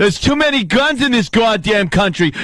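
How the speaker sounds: put-on Boston-accented speech. Recounting hearing a man talk about conservatives, imitating a Boston accent. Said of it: "this guy in his Boston accent".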